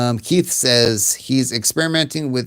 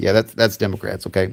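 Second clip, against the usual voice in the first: usual speaking voice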